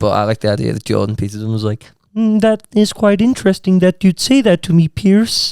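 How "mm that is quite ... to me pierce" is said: slow drawn-out delivery in a high froggy voice. Retelling how an interviewee answered a TV host: Jordan Peterson impression. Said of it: "That's what he talks like".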